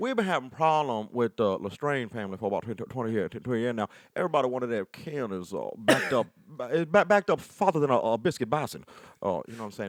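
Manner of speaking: put-on Louisiana sheriff voice, loud and high. A speaker describes someone's existing bit, doing a Louisiana tenth Ward sheriff impression. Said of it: "impression of a like Louisiana tenth Ward uh sheriff".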